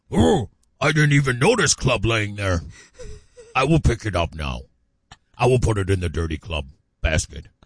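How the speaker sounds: meek, slow, sing-song put-on caveman voice. Acting out a caveman husband promising to pick up his club: caveman voice. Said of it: "they all talked like that back in the day".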